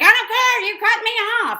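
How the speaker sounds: put-on shrill, high-pitched shouted yell. Recounting an argument through a rolled-down car window, quoting the woman: imitating someone yelling. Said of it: "and she's yelling".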